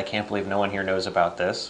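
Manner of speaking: plain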